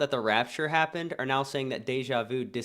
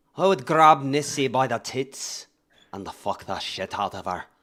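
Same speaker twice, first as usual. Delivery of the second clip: loud put-on Scottish accent; 5 dB louder than usual. Asked to do a Scottish impression, the speaker performs a Scottish accent impression. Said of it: "Is that good Scottish?".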